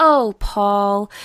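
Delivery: put-on saccharine tone, sickly sweet and syrupy. Quoting a film character speaking to Paul, imitating a sickly sweet voice. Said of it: "this sickly sweet voice".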